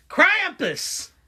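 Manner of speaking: very high, exaggerated Southern accent. Showing how to say the name krampus in a stereotypical southern accent. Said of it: "you gotta say it with the with the stereotypical Southern accent".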